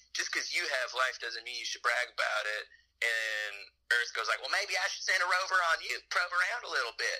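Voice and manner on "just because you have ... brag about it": ordinary talk, nothing marked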